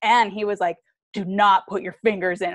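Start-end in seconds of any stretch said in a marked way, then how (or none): 1.1-2.5 put-on gruff man voice. Retelling what a grizzled tiger keeper said: imitating a gruff man. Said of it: "a very gruff".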